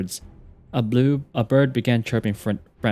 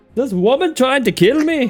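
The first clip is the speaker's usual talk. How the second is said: put-on Scottish man's accent; 7 dB louder than usual. Imitating a bird's internal voice from the game: Scottish accent. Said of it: "localize his internal voice is to be like a Scottish dude".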